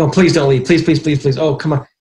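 put-on pleading. Retelling how the other side in a negotiation begged them not to leave, mock begging. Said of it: "they're hanging on my ankles saying".

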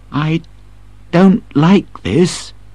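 restrained, understated. Reading a story, the narrator voices a character's line quietly. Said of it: "says Kim quietly".

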